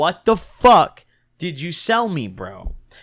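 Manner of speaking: slow, mock pissed-off, angry, confrontational tone. Retelling a confrontation with a shop worker: imitating angry Michael. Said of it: "Michael's pissed".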